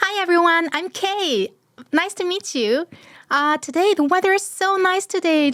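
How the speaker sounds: cute, bubbly voice. Presenting virtual character K, a first-year college girl: cute, bubbly K voice. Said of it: "좀 귀엽고 발랄한 네 그 K 같은 경우는 목소리가 약간".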